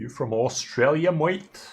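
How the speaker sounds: terrible put-on high-pitched Australian accent. Joking about Austria versus Australia, asking in a bad Australian accent. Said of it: "That was the worst Australian accent I could have mustered".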